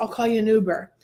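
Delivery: normal talking voice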